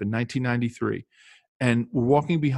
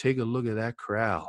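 soft, best-effort put-on North Carolina accent; 5 dB quieter than usual. Recounting a man stopping the team at a football game, imitating a North Carolina accent. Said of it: "North Carolina accent".

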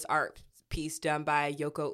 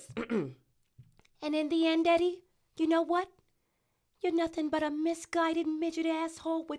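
put-on heavy, thick New York accent, pitched very high; 13 semitones higher than usual. Quoting a woman from a clip in an earlier episode, thick new york accent. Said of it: "Would you do a better thick New York accent than me?".

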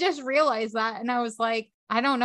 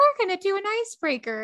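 voice riding way up high; 8 semitones higher than usual. A podcast host mimics how their own voice sounded, imitating own high-pitched voice. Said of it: "It is like so high pitched".

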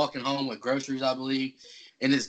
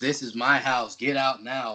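put-on possessed voice, much slower. Retelling the moment Janet speaks during the show: Janet's possessed voice. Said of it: "speaking in this really possessed voice".

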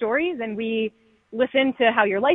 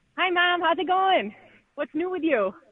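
strong, laid-on Michigan accent with raised pitch; 7 semitones higher than usual. Showing how they greet their mom on the phone, in a really Michigan accent. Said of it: "I sound really Michigan. So if I get on the phone with my mom, I'll be like".

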